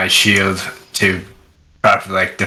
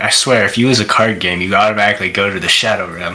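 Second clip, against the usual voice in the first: mumbled words, muttered as if to nobody. A player's character searches around for cards, muttering under breath. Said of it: "muttering something under my breath".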